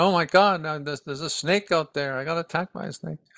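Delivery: high, frantic, panicked cry of alarm. Telling of a man bitten by a snake, the speaker is retelling a man's crying. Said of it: "and he's crying".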